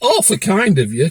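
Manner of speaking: syrupy, falsely polite courtesy laced with sarcasm. Recounting a reply to a woman who gave a fine, retelling a sarcastic remark. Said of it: "I've been a bit sarcastic".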